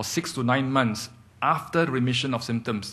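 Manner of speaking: stress on after, with falling tune. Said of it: "I underline the word after".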